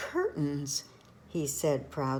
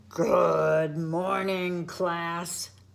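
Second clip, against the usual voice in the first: loud roaring lion voice, "good" stretched; 5 dB louder than usual. Reading a picture book, the teacher dressed as a lion greets the class; roaring lion voice. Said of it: "said the lion with a roar".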